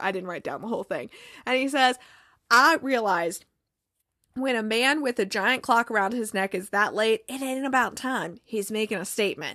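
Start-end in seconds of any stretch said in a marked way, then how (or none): none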